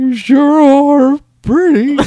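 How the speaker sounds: put-on very high, very loud, cracking teenage boy voice. Joking around with a co-host, a speaker delivers a line in a cracking pubescent boy voice. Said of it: "the pubescent boy".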